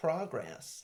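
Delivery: "progress" in put-on American accent, soft and high. Saying a word for listeners in America, in a put-on American accent. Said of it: "That type of American".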